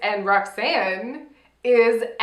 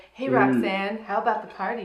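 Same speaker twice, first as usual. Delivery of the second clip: put-on sexy guy voice, quieter; 4 dB quieter than usual. Acting out a flirty party invitation from a recap: Chad voice. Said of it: "sexy guy, like".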